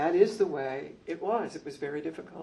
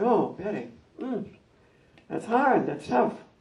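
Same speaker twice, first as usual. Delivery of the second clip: higher, amused smiling voice. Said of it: "hear the smile in his voice".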